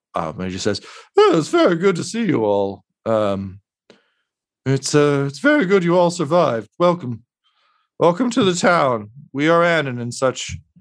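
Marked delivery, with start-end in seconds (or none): 1.1-10.5 sorrowful, sad, much higher pitch. Game master voicing a sadly smiling man welcoming the party to town, sad. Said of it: "it's a sad smile".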